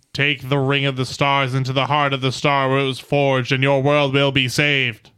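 very loud, booming, resounding voice, rushed. Narrating a game scene, the Zodar speaks to the players: loud, resounding Zodar voice. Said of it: "a loud, resounding, supernal voice".

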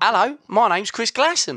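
attempted Australian accent. Asked to say a line in an accent, attempting an Australian accent. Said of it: "do an Australian".

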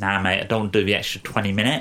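clumsy, worst-ever put-on Essex accent. Speaker quoting the listener's earlier reply back to them, in a bad Essex accent. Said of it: "That was the worst Essex accent I've ever heard".

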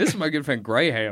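mock American English accent. Trying out how Americans would introduce a friend: imitating an American accent. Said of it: "Do they say Graham with an American accent?".

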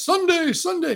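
high, booming, hyped radio ad announcer voice. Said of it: "it was always that voice".

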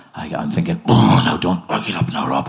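ordinary talk

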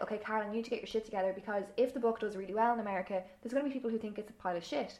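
ordinary delivery

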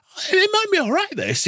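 wishful, hopeful voice jumped an octave, very high. Recalling how they had bought into something: voice up an octave. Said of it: "in my voice going up an octave".

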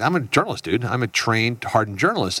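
ordinary delivery

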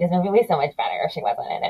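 put-on fast, indignant child voice complaining. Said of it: "me being indignant".

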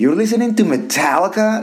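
scornful, disbelieving, disdainful tone with rising pitch. Retelling when the speaker's wife walked in on the music, imitating wife's disdain. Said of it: "she said it with such disdain".

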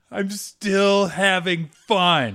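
very slow, angry, drawn-out high yell. Recalling a puzzle session, the speaker quotes the listener, imitating someone yelling. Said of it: "you just yelled".

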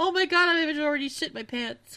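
put-on, high, loud panicked silent scream. Imagining a woman's hidden inner voice: imitating inner panic. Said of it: "And inside she's like".

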